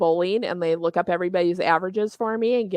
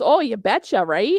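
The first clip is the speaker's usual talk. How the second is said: put-on Minnesota accent with a teasing, poking-fun tone; 4 semitones higher, 4 dB louder than usual. Retelling how a man makes fun of the way you talk, in a mocking Minnesota accent. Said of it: "my Minnesota accent comes out".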